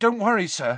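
urgent, worried tone. Harry at once reassures the exhausted Dumbledore: anxious. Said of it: "said Harry at once, anxious".

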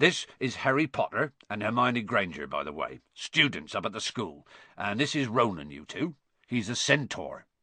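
ordinary delivery

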